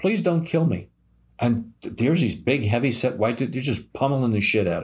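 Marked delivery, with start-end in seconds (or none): 0.0-0.9 high, begging, pleading voice. Speaker retells a youth tied to a chair pleading with attackers; retelling a begging plea. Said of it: "and he was begging".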